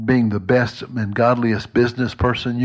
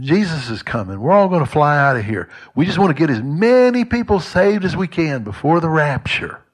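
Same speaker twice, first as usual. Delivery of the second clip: lightly mocking put-on parody voice, pitched up; 5 semitones higher than usual. Mocking believers who just wait to fly out: put-on mocking tone. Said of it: "I know I sounded a little mocking there".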